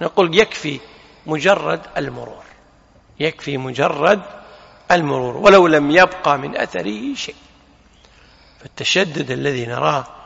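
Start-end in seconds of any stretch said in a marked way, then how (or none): none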